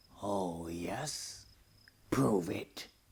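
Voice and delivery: growling, taunting voice. Narrator reads Goat's reply to Ant's challenge, growled. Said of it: "growled Goat".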